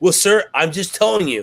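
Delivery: intense, pressing delivery. Retelling a woman who got intense over him buying guns, imitating an intense woman. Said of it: "She was like really intense".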